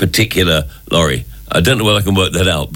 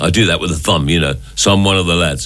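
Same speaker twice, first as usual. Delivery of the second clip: plain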